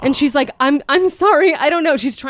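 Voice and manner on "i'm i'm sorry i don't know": high, flustered, giggly, stumbling nervous laughing voice. Retelling a worker's reply to a creepy customer: imitating a woman laughing nervously. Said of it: "she's laughing".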